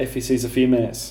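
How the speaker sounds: normal talking voice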